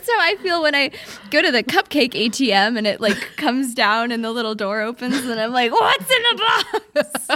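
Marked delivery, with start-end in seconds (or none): 5.7-7.4 very high, long, drawn-out shrill shriek. A speaker describes the cupcake ATM door opening, then goes mock-shrieking. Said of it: "the way that he's shrieking it".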